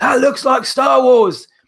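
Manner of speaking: play-acted, high-pitched hollering. Retelling shouting to someone in a different car, re-enacting own shout. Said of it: "And I'm shouting".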